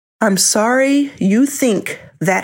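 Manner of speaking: slow, high, condescending talking-down tone. Retelling what she said to the speaker, repeating it, imitating condescending tone. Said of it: "very condescendingly says to me".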